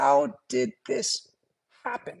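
high, squeaky voice with a creak. Retelling a frail old mother in bed turning to the speaker, squeaky voice. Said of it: "she squeaks out".

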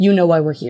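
put-on aggressive tone. Speaker recalls men at their residence door speaking, imitating an aggressive tone. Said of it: "in a very aggressive tone".

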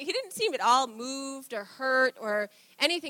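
normal talking voice

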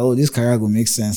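ordinary talk, nothing marked

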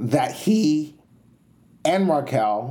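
slow voice, breaking and cracking. Talking about a narrative planned for a reunion, the speaker's voice cracks: voice cracking. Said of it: "my voice just cracked".

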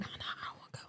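hushed whisper. Recalling asking to go somewhere as a child while a parent was on the phone, whispering. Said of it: "Just whispering".

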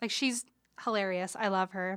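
ordinary talk

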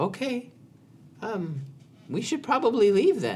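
meek, high, wide-ranging, timid squeaky goblin voice.

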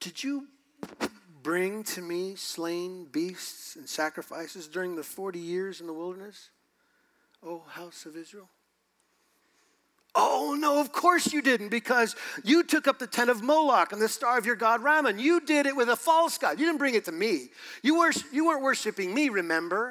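mocking, dripping, heavy sarcastic rebuking tone. Reading God speaking to Israel from scripture, sarcastic. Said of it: "It's just dripping with a sarcastic response".

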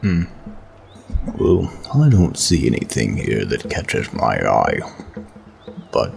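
muffled speech through a mouthful of food. Looking over the items on offer, the speaker comments while talking with mouth full. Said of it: "Why the hell are you talking like that?".

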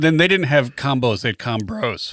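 voice cracking and breaking midway. In a casual back-and-forth, voice cracking midway. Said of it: "my voice cracked in the middle of that".

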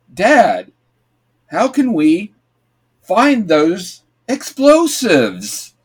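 stilted, choppy reading with erratic inflection and awkward pauses. Mocking the son's voice acting: awkward pauses, inflections all over. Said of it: "he can't read three, like, words without pausing awkwardly, and his inflections are always all over the place. It's like".

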